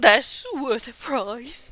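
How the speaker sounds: put-on teary voice. Speaker retells what a man said to them, acting out a teary remark. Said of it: "kind of wiping his his tears".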